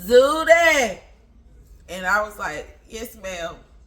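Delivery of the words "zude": booming, loud, long drawn-out woman's voice. Retelling a conversation with her, imitating her voice. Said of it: "let me do her voice for y'all".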